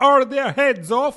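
very high, shrill, regal-sounding yell. Narrator reading the queen calling out to her soldiers: shouting. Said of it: "Shouted the queen".

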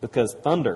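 ordinary delivery

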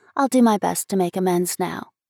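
plain reading voice

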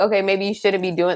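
ordinary delivery

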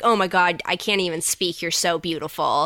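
ordinary talk

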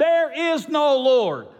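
very high, bellowing, full-lung shout. Telling a joke, voicing the neighbor's reply to the old lady, shouting at the top of lungs. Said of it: "he'd say to the top of his lungs".

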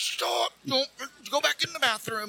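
high, urgent, carrying shout. Recounting yelling at someone walking out of the bathroom; retelling a yell. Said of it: "I'm yelling at her".

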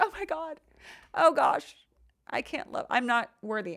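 crushed, drawn-out, distressed self-pitying lament. Explaining self-esteem, the speaker acts out their reaction to rejection: imitating own rejected self. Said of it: "That's just like an imitation of myself when somebody rejects me".

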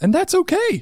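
sudden, very high, squeaky voice jump. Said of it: "My voice went up, like, seven octaves there".

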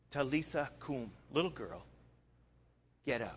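hushed, soft, gentle, tender half-whisper. Retelling words said to a twelve-year-old girl: imitating a half-whisper. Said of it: "he just whispers to her".

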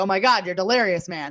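ordinary delivery

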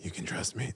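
very quiet, breathy superhero whisper, all breath.

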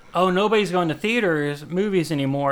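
ordinary delivery

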